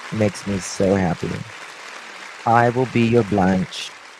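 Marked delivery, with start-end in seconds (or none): 2.5-3.9 sudden British-sounding English accent. Reading a fan's comment aloud and answering the fan, in an english accent. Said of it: "I don't know why I gave an English accent".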